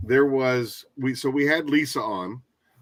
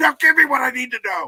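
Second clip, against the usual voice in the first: frantic manic ranting, higher and louder; 13 semitones higher, 6 dB louder than usual. Retelling demands made at sema when stressed: imitating himself as a madman. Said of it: "I was a madman at".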